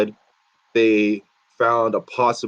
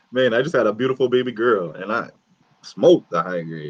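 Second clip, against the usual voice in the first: usual speaking voice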